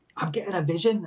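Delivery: put-on strong Liverpool accent laid on. Remembering an overly camp guy, doing a Derek Acorah impression. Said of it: "no strong Liverpudlian accent".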